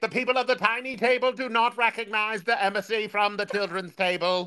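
high, fake, put-on Scottish accent. Speaker retells answering the kids' table for the tiny table: put-on Scottish accent. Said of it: "why are you Scottish?".

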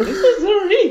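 very high, laughing, unsuccessful attempt at a put-on voice.

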